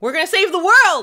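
loud, high-pitched shouting yell. A player starting a game, yelling. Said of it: "I don't know why I'm yelling".

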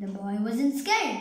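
plain

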